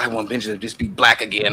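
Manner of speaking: switched to a female voice. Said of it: "you need to start using that voice right there".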